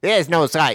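put-on Australian accent. Joking about an Australian version of a tagline: Australian accent. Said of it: "Not to be confused with the Australian version".

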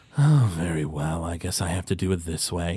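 low voice, spoken through a sigh. Voicing a character who couldn't get into the player's backpack, sighing. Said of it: "he just sort of, like, sighs".

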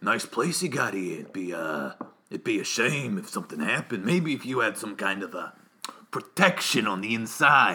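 menacing mob boss voice. Describing a bad guy who sounded like a mob boss with a bat: mob boss voice. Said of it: "he was a mob boss walking around".

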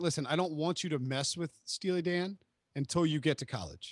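ordinary delivery

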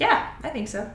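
said with plenty of sarcasm. Answering a remark that laundry is the weekend's most interesting part: sarcastic. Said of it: "I say that with not a small degree of sarcasm".

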